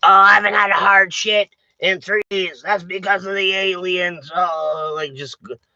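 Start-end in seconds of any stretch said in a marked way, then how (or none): 0.0-4.3 badly imitated, ranting voice. Showing a bad impression of Alex Jones ranting: bad Alex Jones impression. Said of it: "that's a bad impression".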